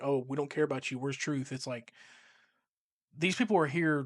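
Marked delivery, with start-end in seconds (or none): none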